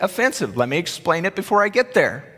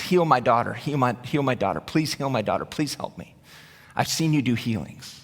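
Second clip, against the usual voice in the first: put-on, insistent, repeated pleading tone; 7 semitones lower, 5 dB quieter than usual. Acting out a woman begging Jesus to heal her daughter: imitating a woman begging. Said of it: "this woman is begging".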